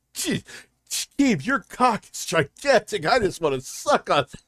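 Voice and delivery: high, corny, sneering mocking voice, laid on thick. Reacting to a clip and mocking the guy's corny line: mocking impression of DSP. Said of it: "He's like".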